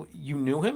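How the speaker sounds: plain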